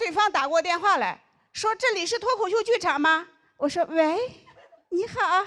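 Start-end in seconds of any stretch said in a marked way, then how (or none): 3.9-5.5 put-on, high, cutesy girly jiazi voice. Retelling answering a comedy theater's phone calls, in a put-on cutesy girly voice. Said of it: "你要用夹子音".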